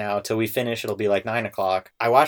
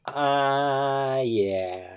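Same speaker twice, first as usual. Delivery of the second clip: unsure, hesitating, with a hesitant drawn-out uh; 3 semitones higher than usual. Asked if he is high energy, answering in a hesitant way. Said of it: "That was I a really hesitant".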